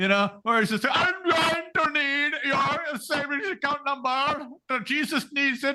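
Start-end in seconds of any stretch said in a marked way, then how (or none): 0.9-5.8 heavy, thick, put-on Indian accent, pitched up. Imitating a man who sounds like he's ripping off your grandma, thick Indian accent. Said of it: "a much thicker Indian accent".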